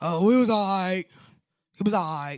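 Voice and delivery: put-on man voice. Retelling how former husbands answered about their day: imitating a man's voice. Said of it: "that's the man voice".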